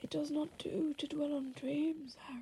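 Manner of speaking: soft, hushed, even delivery. Asked by the interviewee, the interviewer does a Dumbledore impression. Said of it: "That was actually really good".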